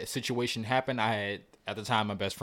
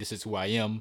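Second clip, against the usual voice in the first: plain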